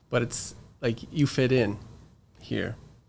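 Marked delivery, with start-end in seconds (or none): 1.1-2.7 touched, a little emotional, emotion creeping in. Answering what to teach children, thinking of own kids: a little emotional. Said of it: "I'm getting a little emotional here".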